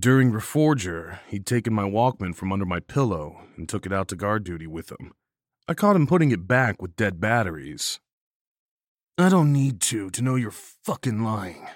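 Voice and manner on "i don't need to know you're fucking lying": contemptuous, scornful, sneering tone. Narrator reads the line of a man caught returning the narrator's Walkman, sneering. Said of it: "he sneered".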